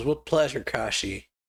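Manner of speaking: ordinary delivery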